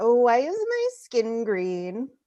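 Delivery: animated character voice, pitch swooping widely up and down. Doing a joke impression of Marie Curie on stage. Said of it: "this is my impression of Marie Curie".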